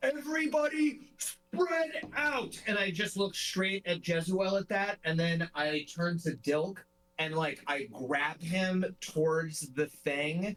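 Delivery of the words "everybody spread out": shrill, very high-pitched yelling. A player in a tabletop game has their character call to everyone, shouting. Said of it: "I shout".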